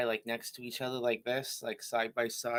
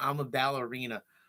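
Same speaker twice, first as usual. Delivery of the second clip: usual speaking voice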